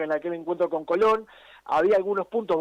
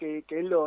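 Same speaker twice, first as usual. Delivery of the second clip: usual speaking voice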